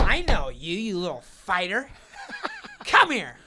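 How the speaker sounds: high, loud, swooping, all-over-the-place taunting delivery. Retelling being chased around a room: Andy Dick impression. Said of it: "That's a good Andy Dick".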